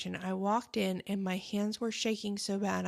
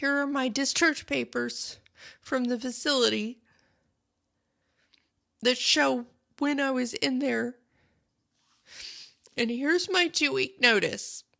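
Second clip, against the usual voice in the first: imitated tearful cracking voice, higher and louder; 5 semitones higher, 5 dB louder than usual. Retelling handing over records and a two-week notice: retelling a tearful cracking voice. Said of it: "with tears running down my face and my hands shaking and my voice cracking".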